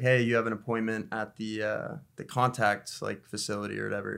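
ordinary delivery

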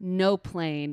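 ordinary talk, nothing marked

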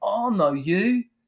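high, slow, really bad Kiwi accent.

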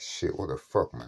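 plain

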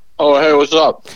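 talking with mouth full. Caller answering the host on the phone while eating hot wings: talking with mouth full. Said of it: "you sound like you got a mouthful there".

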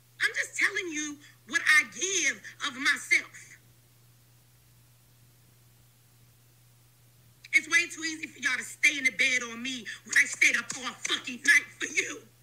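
voice cracking, on the verge of crying. A woman addresses her community: voice cracking, near tears. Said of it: "her voice cracking. She about to cry".

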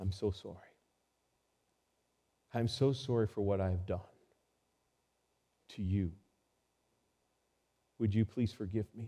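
put-on humble whisper. Retelling a tearful courtroom apology: imitating Ryan's humble whisper. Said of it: "he whispered in a very humbling way".

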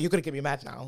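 ordinary talk, nothing marked

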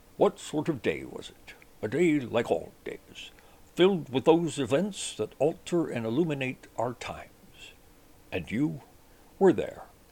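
classic veteran TV anchorman voice. Closing an episode with a classic program's closing line: Walter Cronkite voice. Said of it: "read with the best Walter Cronkite voice I can do".

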